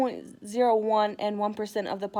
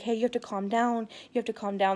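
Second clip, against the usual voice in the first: put-on whispering. Retelling what someone said while calming a crying friend: imitating someone whispering. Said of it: "whispering in my ear".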